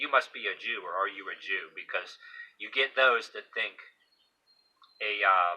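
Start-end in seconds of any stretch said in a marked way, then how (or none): 0.0-1.7 put-on dry, needling, sarcastic mocking jab. Retelling what a man at a bar says: imitating a sarcastic man. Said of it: "he'll say sarcastically".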